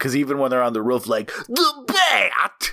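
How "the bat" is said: very high carnival barker cry. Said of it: "[name] is making fun of a carnival barker".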